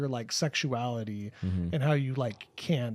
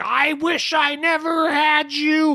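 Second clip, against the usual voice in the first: shrieking, very high, very loud, very slow drawn-out yell; 10 dB louder than usual. Retelling a horror film scene where a mother yells at her son: imitating Toni Collette yelling. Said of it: "yelling at, like, her son, she's like".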